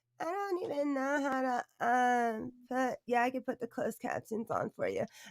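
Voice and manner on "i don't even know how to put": mocking imitation, higher and quieter. Mocking how another woman talks about her phone: mocking imitation of her. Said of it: "she said".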